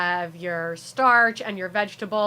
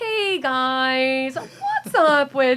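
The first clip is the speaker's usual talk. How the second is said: awkward voice, high, very slow, "guys" stretched; 5 semitones higher, 4 dB louder than usual. Retelling being made to do stand-up on the show, in a weird awkward voice. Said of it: "I automatically like default to this weird awkward voice".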